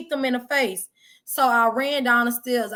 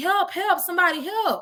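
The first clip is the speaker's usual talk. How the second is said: high, play-acted crying and sobbing; 7 semitones higher than usual. Retelling running down a busy street bleeding, imitating own crying plea for help. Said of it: "I'm crying, saying".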